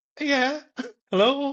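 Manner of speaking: mock super nervous, very high-pitched, loud. Recalling sprinting onto the set to greet the production, acting out being super nervous. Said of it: "just super nervous".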